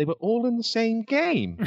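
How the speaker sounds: put-on very high, amazed kid voice. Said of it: "I think his reaction was".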